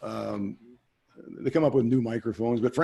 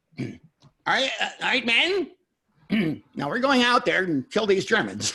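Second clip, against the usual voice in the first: very high, squeaky, stuttering voice; 9 semitones higher than usual. Retelling how his dad described Patton, in Patton's squeaky high stuttering voice. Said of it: "little squeaky high voice and he stuttered".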